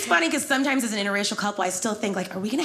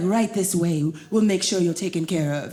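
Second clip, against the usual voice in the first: bad, terrible, put-on fake Nigerian accent; 5 semitones lower than usual. Retelling how a man welcomed her and led her in, bad nigerian accent. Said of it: "this is a terrible accent".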